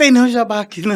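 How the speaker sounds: put-on cross, angry, high-pitched scolding mother voice. Retelling how the mother came out to the gate: imitating an angry mother. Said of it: "Aí minha mãe saiu brava".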